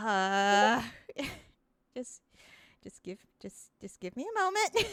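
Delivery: flustered, panicked stalling. A character rummages in a picnic basket while stalling, panicking. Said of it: "he starts panicking again".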